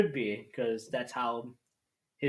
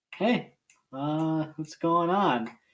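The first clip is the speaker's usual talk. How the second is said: slow, drawn-out, nerdy and awkward delivery; 4 semitones higher than usual. Describing a character's awkward entrance, doing a nerdy, awkward Peter Parker impression. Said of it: "comes out in this like nerdy, awkward way".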